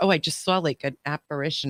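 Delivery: ordinary talk, nothing marked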